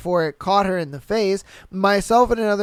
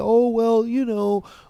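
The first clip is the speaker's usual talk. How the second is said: play-acted courteous, slow, nice polite tone; 3 semitones higher than usual. Imitating how the person in charge tells customers: imitating a nice manager tone. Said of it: "in a manager nice way".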